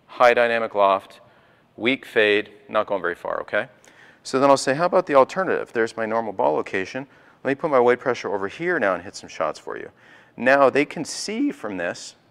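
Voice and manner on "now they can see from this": voice cracks, slower. Demonstrating golf shots for an audience of professionals, voice cracking. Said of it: "my voice is cracked".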